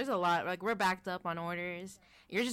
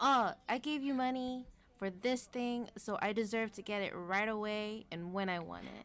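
entitled, spoiled, insistent demanding tone; 3 semitones higher than usual. Complaining about customer service, imitating an entitled customer. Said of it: "they're just so entitled, saying".

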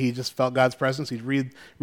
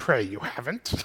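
hushed, breathy whisper of an ancient sage; 7 dB quieter than usual. Retelling a dad's reply in a story as Yoda would say it, Yoda voice. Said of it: "I could hear Yoda's voice saying".

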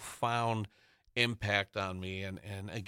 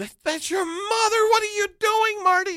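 very high, loud, shocked squeal. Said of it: "watching her go".

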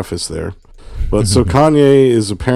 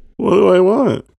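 flustered, high-pitched squeaky delivery. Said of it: "I'm like".

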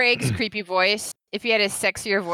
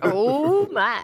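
put-on smooth sexy voice, higher pitch; 4 semitones higher than usual. Joking about a smoother recording voice: George Takei voice. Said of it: "Be like, uh, George Takei".

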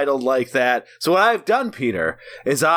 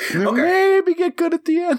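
very high-pitched voice, shooting up high; 13 semitones higher than usual. Opening an episode and talking to the other speaker, voice going up really high. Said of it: "so when your voice goes up really high".

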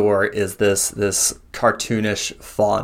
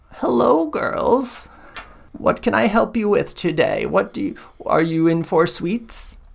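put-on kind elderly woman voice, much higher pitch; 11 semitones higher than usual. Retelling how the woman behind the counter greets the girls, in a kind elderly woman voice. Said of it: "this very kind elderly woman".

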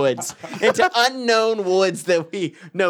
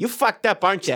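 put-on Wisconsin accent with Midwest flavour; 3 semitones higher than usual. Retelling being busted by a campus security officer, in her Wisconsin accent. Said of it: "They got that accent".

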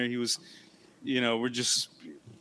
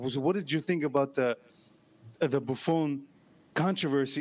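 heavy put-on Italian accent, pressing tone. Retelling a question from an Italian guy at dinner: imitating heavy Italian accent. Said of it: "this Italian guy with a heavy accent is like".

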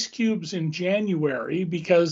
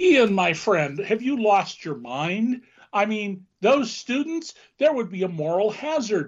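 sarcasm laid on thick, with swooping pitch; 3 semitones higher than usual. Answering a question about bailing out wealthy people: sarcastic. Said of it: "I'm trying to be as sarcastic as".

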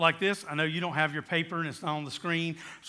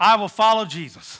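bold and loud, higher and louder; 4 semitones higher, 11 dB louder than usual. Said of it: "say it loud, say it out loud".

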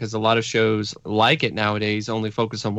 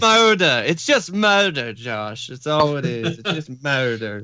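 put-on high, posh, aristocratic upper-class accent; 5 semitones higher than usual. Imitating a co-host's grandma, the speaker uses an aristocrat-sounding accent. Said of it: "You made my grandma sound like an aristocrat".

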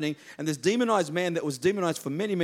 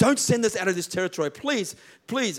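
screamed, play-acted pleading; 4 semitones higher, 4 dB louder than usual. Retelling the Bible story of the demons pleading with Jesus, acting out screaming and pleading. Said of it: "he's screaming and pleading".

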